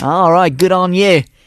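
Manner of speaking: put-on Australian accent. Imitating how a quiz speaker talks: Australian accent impersonation. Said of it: "That's how I do an Australian impersonation".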